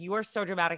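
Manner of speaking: ordinary delivery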